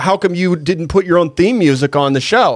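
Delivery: ordinary delivery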